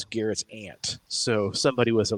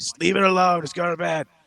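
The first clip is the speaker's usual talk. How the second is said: put-on buzzed, raised, high-pitched yelling; 8 semitones higher than usual. Retelling waking at three in the morning, yelling at the cats: imitating own past yelling. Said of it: "I'm just yelling at my cats".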